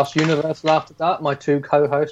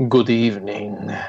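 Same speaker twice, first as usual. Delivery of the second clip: dark, sinister, villainous vampire count voice, Transylvanian; 6 semitones lower than usual. Greeting the other podcast hosts: sinister Count Duckula voice. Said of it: "a sinister [name] there".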